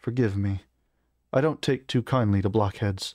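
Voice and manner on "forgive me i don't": ordinary delivery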